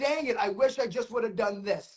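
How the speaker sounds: plain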